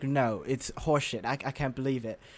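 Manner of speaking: put-on British accent, dismissive tone. Retelling what a judge says to every character: Simon Cowell British impression. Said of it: "That's my British impression".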